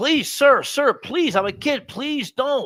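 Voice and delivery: put-on terrified, panicked, frantic begging of a scared kid. Telling how a charter captain jumped into a kid's boat, imitating the fearful kid pleading. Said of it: "the fear in this kid's voice is ridiculous".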